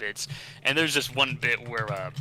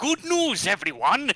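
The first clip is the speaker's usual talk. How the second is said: very high, loud, announcer-like character voice; 12 semitones higher, 6 dB louder than usual. Showing his recorded take for the part, in Professor Farnsworth voice. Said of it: "my uh, Professor Farnsworth".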